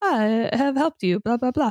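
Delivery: adorable, sweet helper robot voice. Retelling a movie scene, imitating Baymax: adorable Baymax robot voice. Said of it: "his adorable, like, Baymax robot way".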